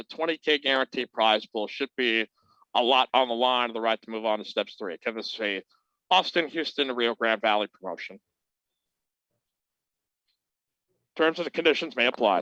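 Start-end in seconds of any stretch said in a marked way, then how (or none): 4.9-12.4 end-of-ad fine-print disclaimer voice. A show host announcing a poker promotion reads the terms: commercial disclaimer voice. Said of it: "my end of commercial disclaimer voice".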